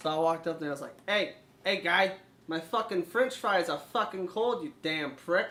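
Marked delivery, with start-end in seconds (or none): 1.1-5.5 put-on Boston accent. Retelling complaining at McDonald's counter just to be funny, Boston accent. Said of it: "the Boston accent".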